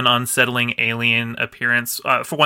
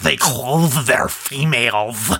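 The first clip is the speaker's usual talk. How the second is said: exaggerated, hammed-up, caricatured cartoon alien voice. Speaker retells how their mom mocks the Ferengi, caricatured Ferengi voice. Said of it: "she goes into the most caricatured voice she can".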